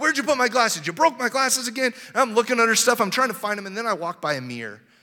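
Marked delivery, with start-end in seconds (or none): 0.0-1.9 high, accusing, scolding yell with voice raised. A speaker tells an audience about losing their glasses, retelling yelling at kids. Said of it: "I'm yelling at my kids".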